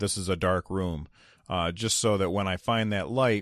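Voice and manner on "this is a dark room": ordinary delivery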